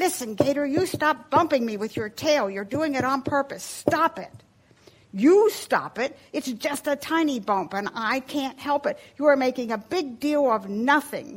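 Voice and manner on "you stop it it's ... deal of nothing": snarled retort tone. Reading Gator's retort to his brother Barabbas during their scuffle, snarling. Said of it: "Gator snarled back".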